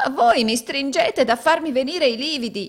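crying out suddenly, high-pitched exclamation. Being led downstairs arm in arm by a companion, exclaiming. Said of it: "esclamò Gride".

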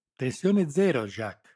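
very loud, high, exultant, triumphant cry. Narrator reads a man answering his colleague at a fence, triumphant. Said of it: "rispose l'altro trionfante".

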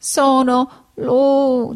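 high-pitched, broken, stammering dying voice. A dying donkey answers a question, stammering. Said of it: "balbettando nel medesimo dialetto".

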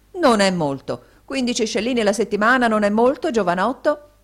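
loud, high exclamation. The mp answers the young man, exclaiming. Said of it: "esclamò l'onorevole Gregsbury".

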